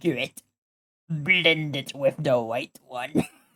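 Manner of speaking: hushed, low-key made-up voice. Retelling a friend's joke about an art instructor, in a Palpatine voice. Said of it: "he just made the voice".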